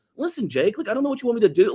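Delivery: very high, earnest, confident pleading. Describing an actor's performance in a movie: earnest pleading Samuel L. Jackson voice. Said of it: "he's very earnest and pleading".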